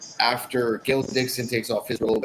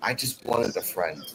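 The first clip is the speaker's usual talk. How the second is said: soft, forlorn, deeply sad voice; 3 semitones lower, 6 dB quieter than usual. Retelling what a wrestler said to the camera: imitating a sad line. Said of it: "says in the saddest line ever".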